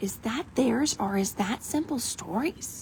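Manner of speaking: hushed, soft half-whisper. Scrolling through backgrounds and wondering whose stencils they are, half-whispering. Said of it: "I don't know why I'm whispering".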